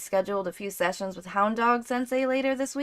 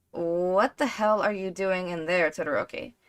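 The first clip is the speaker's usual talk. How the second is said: low, grumpy, grumbling mutter; 4 semitones lower than usual. Reading a story aloud, a character complains about noise: grumbling. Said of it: "Sero grumbles".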